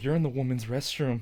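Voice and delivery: put-on shaky frightened voice. Retelling a scared woman confronting him in the restroom, imitating a shaky, scared voice. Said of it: "her voice is like shaking".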